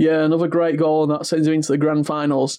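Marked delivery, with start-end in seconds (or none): none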